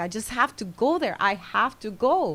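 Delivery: acted crying, tearful and distressed. Retelling a young woman's plea to reach the scene at night: imitating someone crying. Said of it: "and she's crying, and she's upset".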